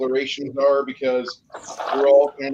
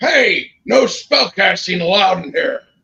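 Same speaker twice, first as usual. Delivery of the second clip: screaming, loud and high-pitched; 6 semitones higher, 7 dB louder than usual. Narrating a tabletop game, the bartender reacts to a player casting a spell, screaming. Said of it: "The bartender screams".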